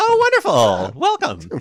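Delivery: gushing, sing-song, really high-pitched, delighted voice. Replying to someone who just joined your mailing list, really high-pitched voice. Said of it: "your voice got really high pitched".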